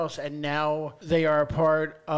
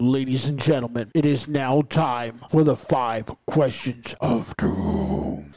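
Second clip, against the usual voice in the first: professional game-show announcer voiceover delivery; 3 semitones lower, 4 dB louder than usual. Starting the question game with the other speaker, doing the voiceover: voiceover announcer voice. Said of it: "he likes the way I do the voiceover".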